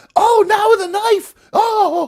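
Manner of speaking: very high, drawn-out, scandalized shocked cry. Retelling a woman in the cinema reacting to each kill: imitating a shocked moviegoer. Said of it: "and she went".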